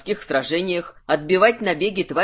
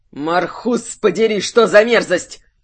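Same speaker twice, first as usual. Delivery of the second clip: loud, furious, raging growl; 5 dB louder than usual. Reading a novel, a character curses as he turns his back on a sea battle; furious growl. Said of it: "С яростью прорычал".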